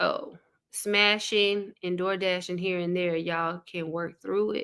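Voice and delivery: ordinary delivery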